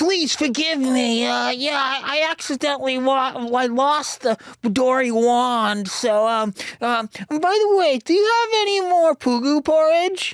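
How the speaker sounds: very high, slow, drawn-out character voice. Voicing the Mayhem Devil card to the other players: voicing the Mayhem Devil. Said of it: "That was a really good impression of you".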